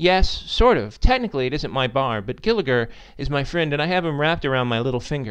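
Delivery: ordinary delivery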